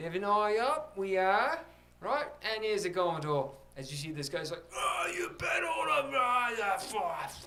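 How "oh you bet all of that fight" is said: put-on drunken yelling, higher, slower. Telling a story about a guy, acting out his drunken yelling. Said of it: "he's just yelling and drunk out of his ass".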